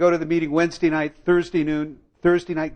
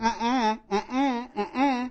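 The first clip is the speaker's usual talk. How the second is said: thin woman's voice, higher and quieter; 7 semitones higher, 5 dB quieter than usual. Retelling the inner voice that warned against drinking: thin blue-haired woman's voice. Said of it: "sounded like some thin, blue-lipped, blue-haired woman saying".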